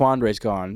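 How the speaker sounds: ordinary talk, nothing marked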